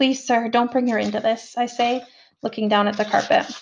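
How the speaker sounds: plain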